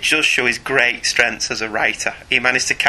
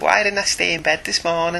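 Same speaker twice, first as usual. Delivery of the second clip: put-on, pitched-up Liverpool scouse accent; 6 semitones higher than usual. After asking another speaker if he can do it, trying a scouse accent. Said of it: "Can I do a scouse accent?".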